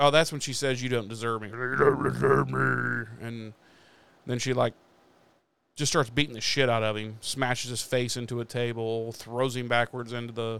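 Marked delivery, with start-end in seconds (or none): 1.5-3.0 rough, creaky demonic voice. Retelling a scene where a woman grabs a man by his hair: demon voice. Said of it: "her voice becomes this demon voice".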